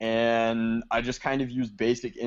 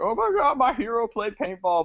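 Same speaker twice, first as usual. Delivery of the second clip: very high, dismayed outcry.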